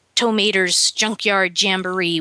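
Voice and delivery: ordinary talk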